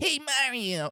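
very high, chirpy, small, nerdy voice. Imitating an actor's line from a movie: Keegan-Michael Key as Toad. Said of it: "Keegan Michael Key's just like".

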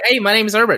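put-on New York accent. Imitating a plant character introducing himself, new york accent. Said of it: "a New York kinda accent".

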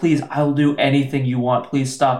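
normal talking voice

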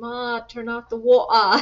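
put-on loud, old-school East End English accent. Show how you spoke to Ma as a child in England, in an old East End English accent. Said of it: "the old East End kind of English accent".

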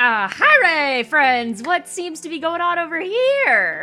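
very loud, odd booming high voice, here drawn out. Narrating a game scene, Trio bounces forward to greet friends in an odd new voice. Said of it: "That's not his voice".

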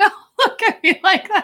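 talking through laughter. Reacting to being looked at, laughing while talking. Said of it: "Why are you laughing?".

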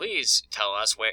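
mock automated message voice, robotic. Recounting a tv scene where a character calls tech support, imitating an automated phone voice. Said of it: "it was an automated voice".

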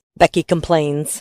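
ordinary delivery

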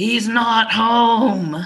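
harsh, throaty, guttural robotic voice, "home" drawn out. Retelling a strange phone call, quote the voice that answered, guttural and robotic. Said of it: "this kind of guttural voice was very robotic".

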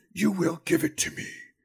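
whispering lich voice. Many creatures speak in unison with one voice; whispering lich voice. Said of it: "The lich that you heard was you embodied those from the previous Adventure Incorporated. His voice sort of rings out of these creatures. ... it's a whisper".

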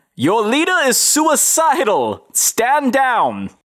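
very high, very slow, drawn-out swooping shout. Playing a character calling out to guards: shouting to the guards. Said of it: "I shout to the guards".

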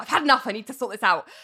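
put-on, flustered, all-in-a-state, worked-up blurt. Retelling a character bursting into an office, imitating someone worked up. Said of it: "she's really worked up".

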